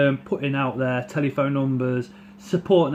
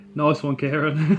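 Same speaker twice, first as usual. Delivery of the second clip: usual speaking voice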